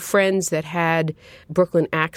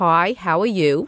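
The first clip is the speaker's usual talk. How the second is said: put-on heavy Brooklyn accent, put on; 2 semitones higher than usual. Speaker showing how they talk to a cousin on the phone, thick Brooklyn accent. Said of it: "suddenly you're talking like this".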